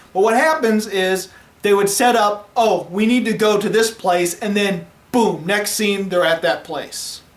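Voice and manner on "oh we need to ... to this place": ordinary talk, nothing marked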